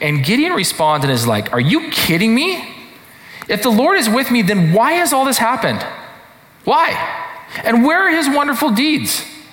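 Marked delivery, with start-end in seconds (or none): 1.5-9.2 play-acted, very high, fed-up, ticked-off tone. Retelling a man's reply to God in a story, acting ticked off. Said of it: "I read it as ticked off".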